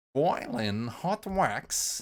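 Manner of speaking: deliberate delivery, each word carefully pronounced. Quoting the voice on a tape: imitating the tape voice's enunciation. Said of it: "enunciated that part of the tape".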